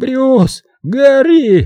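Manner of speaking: very high, desperate, frantic shriek, гори stretched. Someone yells to a companion who is asleep, yelling frantically. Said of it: "истошно завопил".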